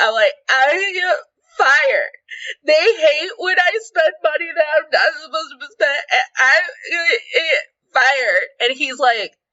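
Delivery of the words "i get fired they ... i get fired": put-on high crying voice, sobbing through words. Retelling a moment of crying over a charge at work: imitating own past crying. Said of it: "And I'm crying".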